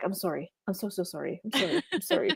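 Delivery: gushing, repeated polite words with swooping pitch. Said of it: "It's the Doctor Who thing".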